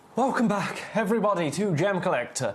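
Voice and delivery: breathless voice. Host welcoming viewers back after a break, out of breath. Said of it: "Sorry, out of breath".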